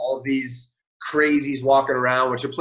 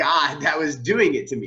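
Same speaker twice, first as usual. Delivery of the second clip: plain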